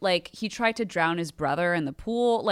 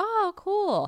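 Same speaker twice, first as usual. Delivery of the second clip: put-on very high, condescending, talking-to-a-child voice; 13 semitones higher than usual. Retelling a wife answering her husband, in a mock talking-to-a-child voice. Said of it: "sounded like a woman talking to her child".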